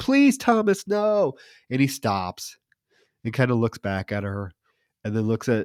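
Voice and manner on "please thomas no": mock very high, desperate begging, pleading scream. Telling a story, quoting a woman in a car as a man raises a flashlight: retelling her scream. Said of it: "she like screams".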